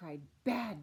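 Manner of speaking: ordinary delivery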